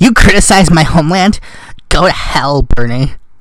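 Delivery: badly done put-on valley girl voice. Mocking a reply to Bernie Sanders' criticism of America: Ben Shapiro as a Valley Girl. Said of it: "make you sound like a Valley Girl".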